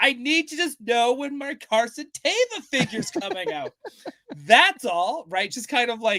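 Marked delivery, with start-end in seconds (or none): 0.0-5.2 slightly obnoxious, dead-earnest, pointedly serious, pitched-up voice. Retelling talking loudly instead of knocking on a door: imitating talking loudly. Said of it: "I started just talking loudly".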